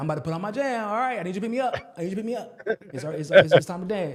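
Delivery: put-on small toddler voice. Retelling how the baby son asks to dance: imitating his young son. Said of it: "and he's like".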